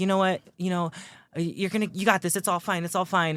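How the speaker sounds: mock forced casual tone. Retelling a movie mother saying goodbye to her son: imitating someone acting nonchalant. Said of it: "trying to act all nonchalant".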